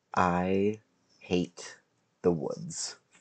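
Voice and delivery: very slow, drawn-out half-whisper. Playing a character who leans in to two others: half-whispering. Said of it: "just kinda whisper to them both".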